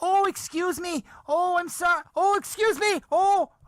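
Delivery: mock, very high, shrill, loud flustered woman's voice. Recounting a woman who kept saying excuse me until the managers looked, imitating a woman's loud voice. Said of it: "she's doing it so loud".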